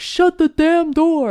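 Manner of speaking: mock high-pitched, slow hollered shout. Retelling how a man in a pub shouted at them: imitating a man shouting. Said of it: "shouted at us, was like".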